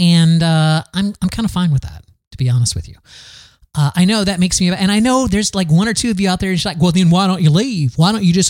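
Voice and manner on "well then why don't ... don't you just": put-on Southern accent. Imitating critics telling the speaker to leave: imitating critics in Southern accent. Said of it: "I don't know why I took a Southern accent for that".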